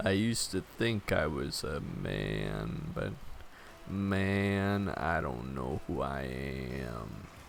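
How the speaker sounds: very low, quiet, hushed creaky vocal fry. Showing the others a voice during the conversation, using vocal fry. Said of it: "the vocal fry when you go like this".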